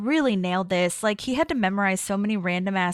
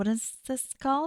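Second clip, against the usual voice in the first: mock judgmental, disapproving, high, hushed voice; 5 semitones higher, 7 dB quieter than usual. Retelling a scene where Leslie forgets the name, imitating Leslie's judgy tone. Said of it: "In her kind of judgy face".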